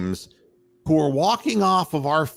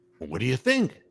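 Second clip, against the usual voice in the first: lost, baffled, confused and helpless tone; 3 semitones lower, 3 dB quieter than usual. Mocking the line judge for looking around after the play: mocking imitation of the line judge. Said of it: "She just looking around like".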